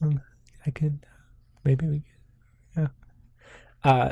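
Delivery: mock barely audible, too-quiet male speech. Retelling a man answering the mayor, imitating a barely audible man. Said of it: "It is almost impossible to hear you".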